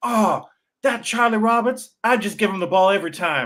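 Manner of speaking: put-on Southern drawl, a touch high. Quoting a guy who was watching the game, in a Southern drawl. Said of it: "with a Southern drawl".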